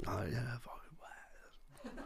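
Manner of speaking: slow, very quiet whisper under the breath. Retelling fantasizing in a bar queue before a gig: imitating own whisper. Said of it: "whispering to myself".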